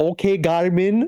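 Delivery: put-on very high-pitched, thick, heavy German accent. Retelling a dash cam crash video: very heavy German accent. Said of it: "in, like, a very heavy German accent".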